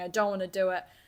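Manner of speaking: imitated sobbing, girl voice. Retelling a girl who was crying her eyes out: imitating a girl sobbing. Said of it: "She's going".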